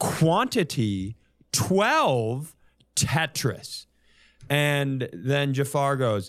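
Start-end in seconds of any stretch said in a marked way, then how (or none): 0.0-3.9 slowed right down, deliberate, word-by-word enunciation. Retelling a customer ordering at the counter, imitating slowed-down speech. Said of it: "he does the slow it down".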